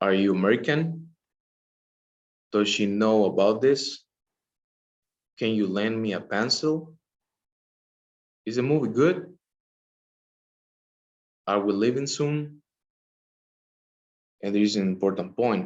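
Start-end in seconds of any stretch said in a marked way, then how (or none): 0.0-12.6 rising pitch at the end of each phrase. Teacher giving example yes-no questions in a lesson: rising intonation at end. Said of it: "do some examples".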